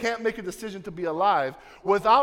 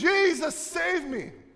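high-pitched, urgent shouting; 9 semitones higher than usual.

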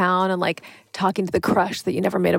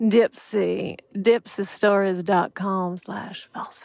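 put-on sexy, sultry southern voice. Repeating a sponsor web address as a joke: put-on sexy southern voice. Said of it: "My sexy voice is a little southern".

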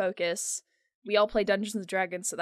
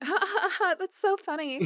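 very high ditzy giggle; 11 semitones higher than usual. Among friends deeper into the game, the speaker demos a stereotypical dumb girl laugh. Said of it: "the stereotypical like dumb girl thing of like".

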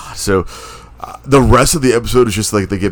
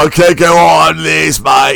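high, loud, slow mock British accent. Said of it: "In a British accent".

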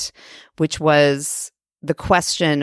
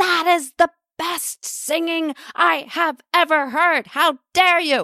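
shouted pretend outrage, very high; 14 semitones higher than usual. Showing how the speaker yells loving praise at someone, in mock-angry yelling. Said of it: "yelling the most loving things at someone, like in an angry tone".

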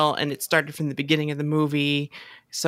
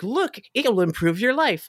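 put-on commercial housewife voice, higher; 6 semitones higher than usual. Retelling a housewife's sales line from an old commercial: imitating a commercial housewife. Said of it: "the housewife lady would be like".

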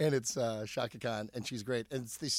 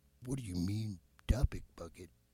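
slightly more refined, polished, low voice; 4 semitones lower than usual. Showing how Stan's voice differs, slightly more refined: imitating Stan's voice. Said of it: "Stan's voice would be like".

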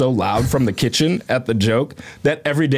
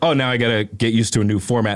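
ordinary delivery

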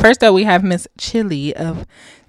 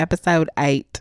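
put-on Australian accent attempt; 3 semitones lower, 5 dB quieter than usual. Trying out a put-on Australian accent while introducing the episode. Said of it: "I feel like my accent is getting better".

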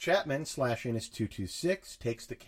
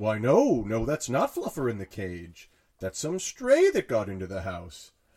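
loud cartoon voice with swooping pitch; 7 dB louder than usual. Retelling a story about a pet, quoting someone: Principal Skinner voice. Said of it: "in my voice, Chapman is Principal Skinner from The Simpsons".

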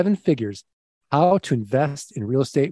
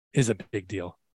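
put-on news-anchor delivery, low and soft; 6 semitones lower, 7 dB quieter than usual. Podcast host introducing his guest, anchorman voice. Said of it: "I'm going to put on my anchorman voice".

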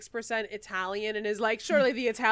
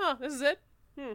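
play-acted dismissive, underwhelmed, higher-pitched tone; 5 semitones higher than usual. Retelling a comic scene, voicing Namor unimpressed with the island. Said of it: "He looks so unimpressed".

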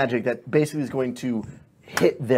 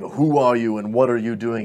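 echoing, booming voice. Voicing a presence that echoes Jasper's question back, booming voice. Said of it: "And it's this booming".

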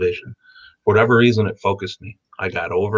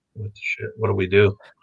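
put-on stunned crowd voices. Retelling how everyone reacted after the speaker screamed at a guy, imitating stunned bystanders. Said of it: "everyone just froze".

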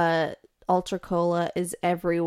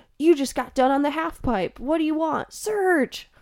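over-the-top '90s commercial voice, pitched much higher; 9 semitones higher than usual. Reminiscing that everything used to be extreme: '90s extreme commercial voice. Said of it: "Why is that voice you made so tied to the '90s?".

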